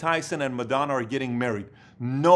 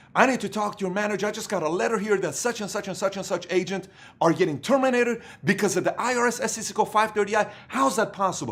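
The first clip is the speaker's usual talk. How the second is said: put-on heated, furious tone, pitched up; 7 semitones higher than usual. Retelling a prank victim calling the number: imitating a furious caller. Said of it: "So he calls this number furious".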